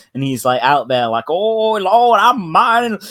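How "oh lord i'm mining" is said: put-on very high, slow, old-timey prospector voice. Imagining a cartoon of a politician as a prospector: old-timey prospector voice. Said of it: "an old-timey prospector".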